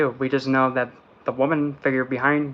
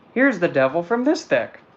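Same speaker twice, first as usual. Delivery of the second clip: voice cracking and breaking mid-line; 4 semitones higher than usual. Showing the devil card from this deck: voice cracking. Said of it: "I just hit it on my voice crack".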